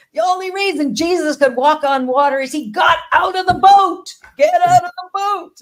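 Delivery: very loud, high-pitched, screaming preacher voice. Retelling a speaker pacing across the stage: imitating Doctor Michael screaming. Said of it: "he screams out".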